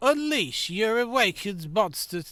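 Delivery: loud, drawn-out, deliberately dumb silly voice. While playing a game, saying a line in a stupid voice. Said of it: "don't know why I'm doing a stupid voice".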